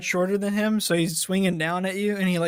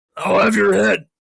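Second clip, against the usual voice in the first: loud, raised, huge orc voice; 7 dB louder than usual. Voicing a ginormous orc rearing back to punch: voicing a huge orc. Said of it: "this ginormous orc".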